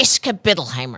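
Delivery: frustrated outburst, said like a swear word. Retelling how mom cursed when frustrated: imitating mom swearing in frustration. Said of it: "she said it like a swear word when she was frustrated".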